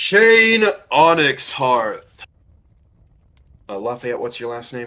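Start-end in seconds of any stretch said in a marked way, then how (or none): 0.0-2.2 big, loud, booming demonic creature voice. Game master voices a creature pointing a blade at a player's character, booming voice. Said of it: "with a booming voice".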